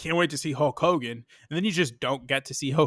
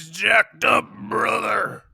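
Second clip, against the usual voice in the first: rough, raspy, pitched-up wrestler voice; 7 semitones higher, 4 dB louder than usual. Talking about a wrestling match, doing a Hulk Hogan impression. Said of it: "the fact that you did that impression".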